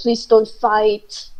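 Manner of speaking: very low, barely formed mumble. Voicing a character who mumbles a plea to stop fighting: mumbling. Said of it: "mumbling something like".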